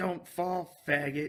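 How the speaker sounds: put-on loud, high holler. Stopping the car near guys on a rooftop, the speaker retells their own yell. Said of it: "I just yelled at him".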